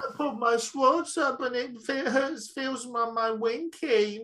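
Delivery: very high, babyish put-on voice. Retelling how he acted, pulling his shorts up: baby voice. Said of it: "in a baby voice going".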